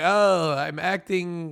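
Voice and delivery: put-on, attempted Turkish accent. Quoting a turkish man, attempted turkish accent. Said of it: "that's the closest I can do to Turkish accent".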